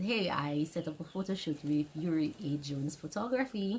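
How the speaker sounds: normal talking voice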